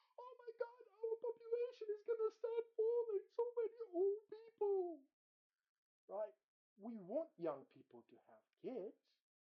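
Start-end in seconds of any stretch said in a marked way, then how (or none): 0.2-5.0 acted, very high, loud, screeching scream. Mocking what scientists said; imitating scientists screaming. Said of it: "started screaming".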